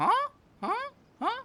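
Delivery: very high little creature voice. Retelling how the other two Hydrofungus react: imitating the Hydrofungus. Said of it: "the other two Hydrofungus come like".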